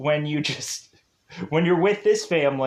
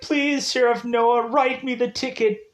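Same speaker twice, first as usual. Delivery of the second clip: mock sobbing, high, tearful crying voice; 7 semitones higher than usual. Retelling a woman pulled over by a sheriff, imitating someone crying. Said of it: "all of a sudden she's like crying".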